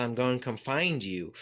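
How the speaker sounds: usual speaking voice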